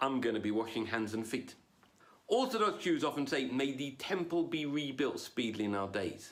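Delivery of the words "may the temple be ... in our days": plain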